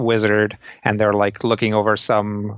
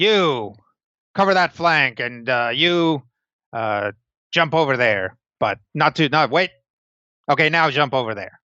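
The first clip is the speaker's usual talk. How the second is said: commanding dwarf field commander voice; 4 semitones higher than usual. Describing a dwarf in charge directing fighters in a battle, shouting dwarf commander. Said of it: "and he's like shouting".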